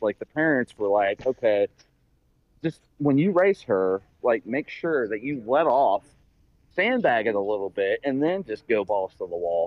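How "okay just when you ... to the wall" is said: ordinary delivery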